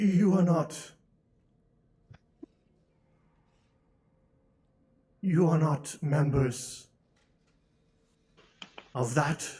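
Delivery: deep beast growl, as if through fangs. A storyteller voices a creature speaking from its fanged maw, growling creature voice. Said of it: "a growling voice come from the uh".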